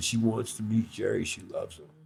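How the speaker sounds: soft, hushed whisper, close by. Retelling what Bill Graham told him about a visitor: imitating Bill Graham whispering. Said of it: "Bill whispered to me".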